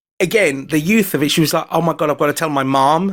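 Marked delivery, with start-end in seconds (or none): 1.7-3.1 rough, attempted put-on American accent. Retelling what a devastated young woman said, in an attempted American accent. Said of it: "Is that your attempted American accent?".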